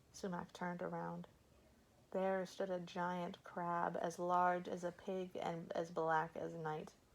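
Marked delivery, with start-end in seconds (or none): none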